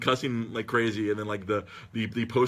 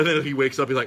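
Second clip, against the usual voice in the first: ordinary delivery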